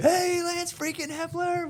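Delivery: excited, very high, slow calling shout.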